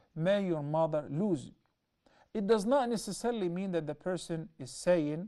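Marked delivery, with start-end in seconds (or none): none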